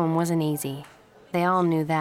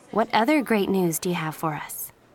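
ordinary delivery

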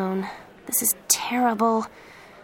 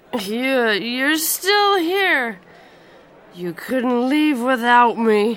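put-on very slurred, drunken-sounding words; 3 semitones higher, 7 dB louder than usual. Narrator reads a drunk man's words as he nearly falls walking up to her, slurred. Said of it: "It was a very slurred voice".

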